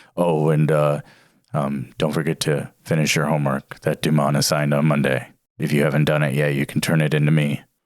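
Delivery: low, monotonous droning. A teacher addressing the class as the bell rings, in a low monotonous drone. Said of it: "in his low, monotonous voice".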